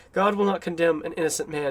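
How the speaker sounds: plain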